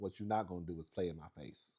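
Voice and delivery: mock dropped voice. Retelling how she told him off, imitating her dropped voice. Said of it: "she dropped her voice about five octaves".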